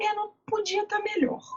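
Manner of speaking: high, flat, reluctant, grudging, patient voice.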